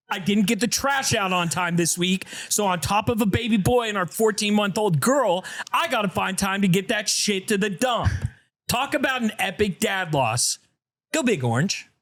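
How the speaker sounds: put-on angry delivery. Reading a listener's message aloud on the pod, in a mock-pissed-off voice. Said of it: "read it like he was pissed".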